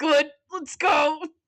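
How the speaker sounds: creepy, leering guy voice. Discussing a story, speaker acts out a male character's reaction in a gross voice. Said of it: "that was a gross uh voice I just did".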